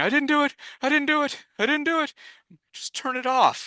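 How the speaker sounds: screaming, pitched way up. Retelling how a driver with arms out the car window screamed: imitating someone screaming. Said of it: "he's screaming".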